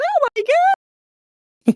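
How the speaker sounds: very loud, very high put-on panicky woman shriek. Before reading an article aloud, put-on panicky woman voice. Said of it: "I might go to the panicky woman voice".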